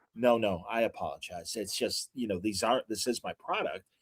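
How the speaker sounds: very quiet, hushed, softened apologetic tone. Retelling how a woman caught herself and apologized, imitating her softened voice. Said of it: "her voice softened".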